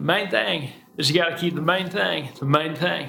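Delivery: put-on Southern accent. Speaker quotes a line a pastor often said, Southern accent as Pastor Charlie. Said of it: "for those of you that don't speak Southern".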